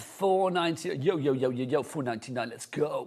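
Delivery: energetic radio DJ voice. Announcing a dropping price to the audience, in a DJ voice. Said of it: "that's my D J voice".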